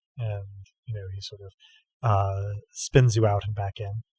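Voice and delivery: ordinary talk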